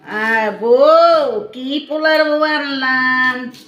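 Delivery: playful, loud, high-pitched teasing call.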